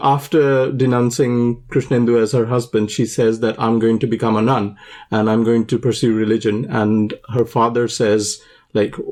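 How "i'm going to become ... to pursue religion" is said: usual speaking voice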